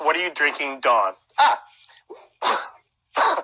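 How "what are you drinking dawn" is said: ordinary talk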